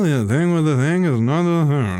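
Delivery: tight, clenched-teeth acted character voice. Imitating Margaret Qualley's tone from a movie, spoken through clenched teeth. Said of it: "my lips aren't even like my teeth are together while I'm talking".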